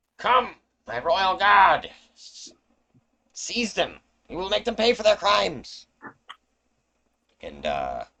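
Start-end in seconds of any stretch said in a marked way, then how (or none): 0.2-5.9 very high, very loud, furious shout. Voicing a furious lady calling to her royal guard: calling out angrily to her guard. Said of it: "she turns behind her and calls out".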